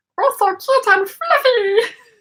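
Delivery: very high, loud, drawn-out cartoon voice. Showing a viewer that the Stitch voice can still be done: Stitch voice. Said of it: "I can do the voice of Stitch".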